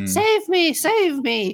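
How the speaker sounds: mock very high, very slow, drawn-out screaming. Describing a movie playing on screen, retelling the actress's scream. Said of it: "she's screaming like".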